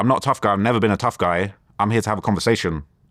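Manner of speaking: plain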